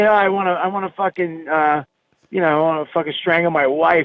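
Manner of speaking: normal talking voice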